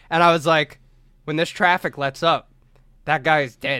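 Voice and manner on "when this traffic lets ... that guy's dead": ordinary talk, nothing marked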